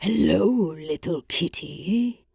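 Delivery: deep, low, growled monster voice. Narrator voicing a monster speaking in the pit, deep growl. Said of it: "the monster growled, his voice as deep as the pit".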